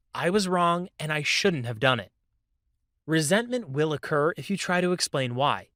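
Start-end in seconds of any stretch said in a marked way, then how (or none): none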